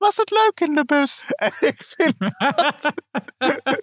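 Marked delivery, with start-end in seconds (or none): 0.0-1.2 very high, utterly sarcastic, dripping voice. Retelling a Sesamstraat scene, the speaker quotes Pino's reply in a sarcastic Pino impression. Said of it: "met de meest sarcastische kutstem".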